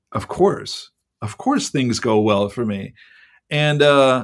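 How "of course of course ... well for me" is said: normal talking voice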